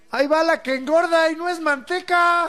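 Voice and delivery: shouted loudly at a high pitch.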